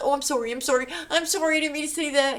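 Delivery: high, terrified, groveling, repeated. Imitating a man who apologizes when he defends himself: imitating a scared apology. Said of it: "He's scared to death of her".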